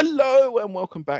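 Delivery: very high-pitched, loud, excited host voice. Showing how the videos get introduced: imitating own excited greeting. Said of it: "out of excitement".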